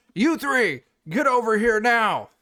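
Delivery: shrill, booming, very high, very loud shouting. Voicing a character throwing a yelled command at guards: shouting a command. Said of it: "I'll be like".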